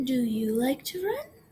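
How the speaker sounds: pitch rising at the end on run. Speaker teaching sentence types, demonstrating a question; voice rising at the end. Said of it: "Do you notice how my voice went up at the end there?".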